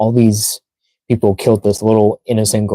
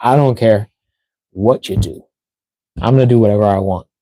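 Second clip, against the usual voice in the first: put-on cocky voice. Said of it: "Shadow has more of a cocky personality".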